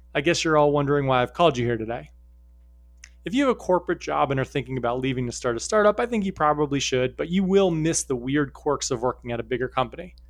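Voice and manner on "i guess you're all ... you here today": ordinary talk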